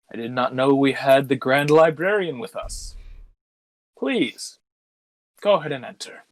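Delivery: slow, mildly crestfallen, disappointed tone. The guard at the front door lets the Grand Librarian in, a little disappointed. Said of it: "look kind of at the ground a little disappointed".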